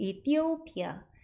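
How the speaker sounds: 이티오피아 with stress on third syllable 오. Pronunciation lesson for 이티오피아, marking the stressed syllable: stress on third syllable 오. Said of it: "번데기에 아이오인데 이렇게 강세가 왔어요. 거기에다 강조를 주셔야 되는 거예요".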